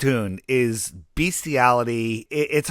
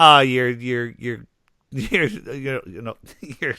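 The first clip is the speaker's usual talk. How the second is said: put-on stammering voice. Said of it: "And I sound like".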